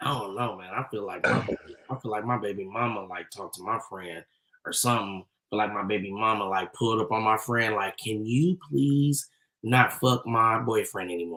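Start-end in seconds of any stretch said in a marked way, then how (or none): 8.0-11.4 put-on small soft voice, lower. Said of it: "super nice and soft-spoken and got a little small voice".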